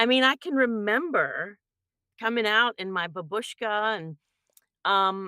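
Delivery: ordinary delivery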